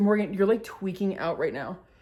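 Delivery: ordinary delivery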